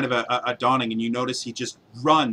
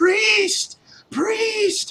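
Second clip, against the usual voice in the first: very high, all-out, full-lung shriek. A storyteller voices a man running out immediately: screaming at the top of lungs. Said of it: "screaming at the top of his lung".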